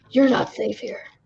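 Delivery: creepy small-town local's voice. Retelling what the creepy guy in the diner said: imitating the creepy diner guy. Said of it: "The creepy guy staring at the T V".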